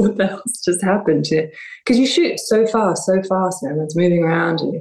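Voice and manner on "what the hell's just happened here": mock crying through the words, teary. Retelling a call to the director after a hard shoot: retelling own crying. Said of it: "sort of crying, going".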